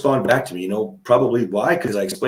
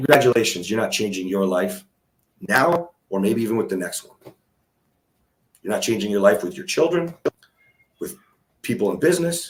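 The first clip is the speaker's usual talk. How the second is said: dripping, heavy, mocking sarcasm; 2 semitones lower than usual. Telling listeners that boundaries alone change nothing: very sarcastic. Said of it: "I say congratulations very sarcastically".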